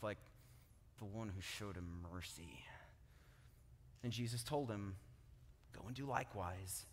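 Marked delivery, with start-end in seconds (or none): 0.0-2.5 put-on speech through gritted teeth, much lower, quieter. Retelling the Good Samaritan parable, voicing the man's reluctant answer through gritted teeth. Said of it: "saying it through gritted teeth".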